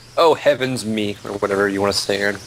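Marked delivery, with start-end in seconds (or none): 0.1-1.1 prissy, fussy robot voice, much slower. Describing Jay being back, the speaker quotes him in a prissy droid voice. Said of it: "in a prissy droid voice".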